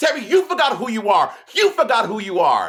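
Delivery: high-pitched, upset yelling. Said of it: "[name] yells at [name] in that, like, high-pitched voice".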